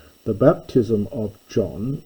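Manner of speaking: ordinary talk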